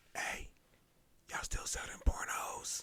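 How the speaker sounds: very quiet, sneaky, secretive, shady whisper. Retelling how a shady customer leaned in to ask him, in a retold whisper. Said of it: "why are you whispering in my ear".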